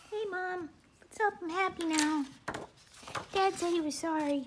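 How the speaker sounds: happy little cat voice, very high. Retelling how the pet came out of her box afterward: voicing her pet cat. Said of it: "she came out and she was like".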